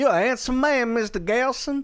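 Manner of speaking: put-on very high Creole-Southern Deep South accent. Showing the accent a man on screen sounds like: Kevin Bacon JFK Deep South accent. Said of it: "that Deep South accent".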